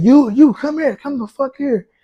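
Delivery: high, mild shouted yell. Retelling how a middle-aged driver reacted when his windshield got hit: imitating someone screaming. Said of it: "and he screaming".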